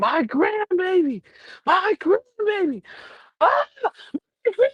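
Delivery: play-acted, shrill, very high, rising screams. Retelling a woman who went live: imitating someone screaming. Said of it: "she's screaming".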